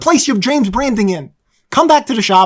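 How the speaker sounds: loud, full-throated yelling. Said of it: "I'm yelling".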